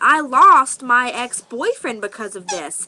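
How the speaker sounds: loud, high-pitched screaming. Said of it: "I was, like, screaming".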